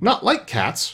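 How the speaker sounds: piercing, shrill, impassioned high outcry. Narrator reads the mouse answering Alice, in a shrill, passionate voice. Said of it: "cried the mouse with a shrill, passionate voice".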